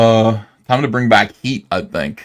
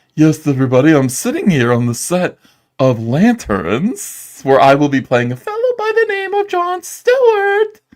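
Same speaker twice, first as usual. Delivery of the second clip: light, swooping, put-on posh British accent; 6 semitones higher than usual. Retelling how someone sounded on a film set: imitating a posh british accent. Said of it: "he's had a little bit of a posh British accent".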